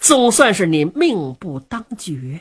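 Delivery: plain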